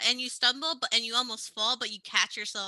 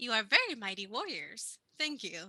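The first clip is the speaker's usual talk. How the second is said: monster-like creature voice; 5 dB quieter than usual. Voicing a hopping Kenku that thanks the three warriors: voicing a Kenku. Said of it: "they almost, like, hop to you three and says".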